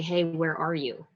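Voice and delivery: ordinary talk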